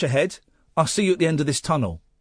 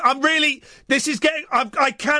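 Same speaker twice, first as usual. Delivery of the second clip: mock very high, halting, broken-off, panicky words; 11 semitones higher than usual. Retelling how a stuck companion answered in the dark: imitating Paul panicking. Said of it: "And he was panicking".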